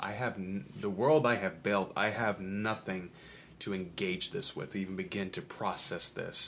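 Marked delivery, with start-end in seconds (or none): none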